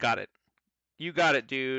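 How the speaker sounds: put-on voice delivered like a sitcom catchphrase. Voicing Vanya agreeing to heal a fallen ally: Michelle from Full House voice. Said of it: "like Michelle in Full House".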